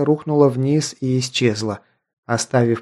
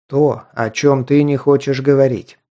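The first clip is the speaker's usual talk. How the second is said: ordinary delivery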